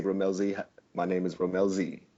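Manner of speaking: gentle, soft-spoken, quiet delivery. Introducing oneself in character, trying not to scare her: said softly. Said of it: "I say it softly".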